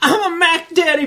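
desperate, loud, very high, cracking voice. Speaker recounts a favorite scene, imitating pimp's desperate cracking voice. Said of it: "That was like a perfect impression".

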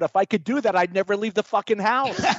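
play-acted, screamed, yelled-out outburst. Speaker retells comedian Paul Rodriguez's airplane joke punchline; retelling Paul Rodriguez's scream. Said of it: "And he screams out".

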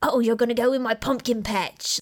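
put-on thick, unrefined English town accent, heavy. Quoting a looked-down-on townsman's line to show his voice, heavy english accent. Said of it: "He has a heavy English accent".

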